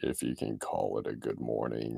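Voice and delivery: very low, soft, gloomy, creaky mutter. Retelling a cartoon scene, quoting the donkey's reply: Eeyore's low gloomy voice. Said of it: "And Eeyore's just like".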